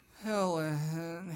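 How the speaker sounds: put-on mopey, sad voice. Retelling a movie scene where a man calls his dead wife's name: imitating a mopey, sad voice. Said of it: "He's, like, all mopey and sad".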